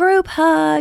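put-on high, happy child-like yell.

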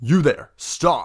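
shouting in a high voice. Voicing a city guard who spots the party: guard yelling. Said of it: "And one yells".

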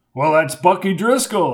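ordinary delivery, nothing marked

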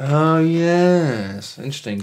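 unconvinced, unconvincing interest, drawn-out yes. Reacting to another speaker's point about hacking: unconvincing tone of voice. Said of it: "in not a convincing tone of voice".

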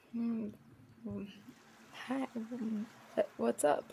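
very slow, groggy, stumbling just-woken mumble. Answering in character after being woken from sleep: just woken, groggy. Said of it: "you are woken from your hammock".

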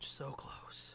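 soft, unvoiced whisper.

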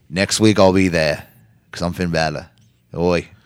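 put-on Australian accent, laid on thick. Quoting a wrestler's promise from the show in an australian accent. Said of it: "I don't know why I have an Australian accent".

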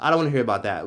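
normal talking voice

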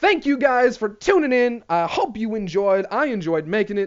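voice cracking. Signing off, thanking viewers for tuning in; voice cracking. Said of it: "I don't know why my voice is cracking right there".

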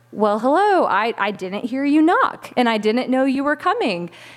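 ordinary talk, nothing marked

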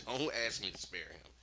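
ordinary talk, nothing marked

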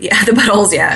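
giggling and laughing through the words. Joking about a funny word with another speaker, laughing while talking. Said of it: "I'm laughing at the word butthole".

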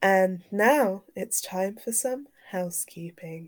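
soft, attempted sultry, sexy delivery. Introducing the housekeeping section, trying it in a sexy voice. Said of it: "Was that sexy voice?".

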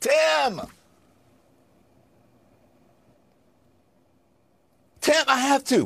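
shouting. Calling out Tim for giving people misinformation: yelling. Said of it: "I know you don't want me to yell".

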